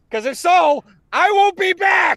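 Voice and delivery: very high, very loud shrieking scream. Performing a requested line, fleeing from a Deathclaw: Arlen screaming at a Deathclaw. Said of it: "I'm doing the screaming".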